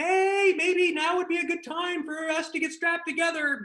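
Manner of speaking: very high, carefully calm delivery. Recounting asking to be strapped in while terrified, retelling a calm, high-pitched ask. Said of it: "in my calmest and maybe highest pitched voice".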